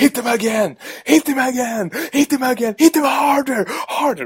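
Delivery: mock very high, shrill screaming, repeated over and over. Retelling a man screaming during a pool fight scene, retelling someone screaming. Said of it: "Då står han och skriker så här".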